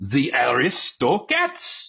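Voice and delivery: terrible fake French accent, sing-song. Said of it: "I just did it right there".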